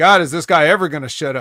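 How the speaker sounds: ordinary delivery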